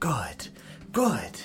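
whispered, cackling voice. Narrating to Marcus, voicing the voice he hears in a cackling voice. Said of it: "you just hear this cackling voice".

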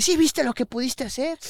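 very high, reproachful scolding voice. Retelling how a lady started scolding him: imitating a lady scolding. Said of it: "me empieza a regañar la señora".

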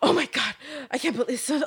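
high, flustered, worked-up outburst. Retelling how a woman reacted after being told off, imitating a flustered woman. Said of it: "Like getting all flustered".

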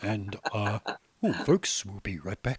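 deep radio announcer voice. Host imagining how they would sound if they could hear themselves, in radio voice. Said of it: "radio voice on".

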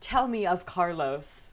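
put-on slow, old-fashioned, old-timey princess voice. Retelling how a woman replied when offered another guy, in an old-timey Victorian princess voice. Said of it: "like a old-timey princess or something, like a Victorian princess".

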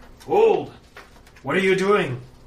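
gruff guard calling out, very high and loud. The game master voices an officious guard calling out to the players: gruff guard calling out. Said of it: "calls out in a gruff tone".

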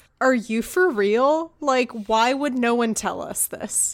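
ordinary talk, nothing marked

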